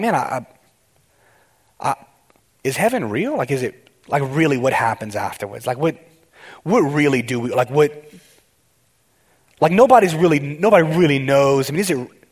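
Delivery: ordinary talk, nothing marked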